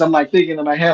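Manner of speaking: usual speaking voice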